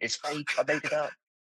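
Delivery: high scream. Retelling screaming at everyone in a channel: imitating himself screaming. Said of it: "I'm absolutely screaming at everyone in the channel".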